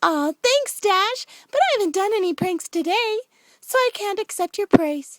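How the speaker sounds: bubbly, giggly, very high-pitched and loud. Narrating Pinkie's reply to Dash, voice Pinkie giggling. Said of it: "Pinkie giggled even more".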